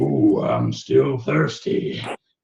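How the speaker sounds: burped-out, belch-born voice erupting out of a burp. Voicing the nasty erupting from a player after a burp: voice erupting after a big burp. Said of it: "voice erupts and says".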